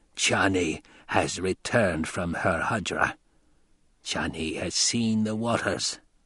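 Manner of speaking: rasping, piercing whisper. An old woman's voice comes to the crowd through a horn in a harsh, penetrating amplified whisper. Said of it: "an amplified whisper, harsh and penetrating".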